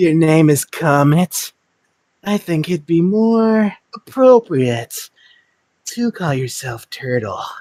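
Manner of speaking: flirty, swooping, sing-song taunting tone. Actor taunting a reindeer named Comet, flirty taunting. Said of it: "It sounds like he's taunting him in a flirty way".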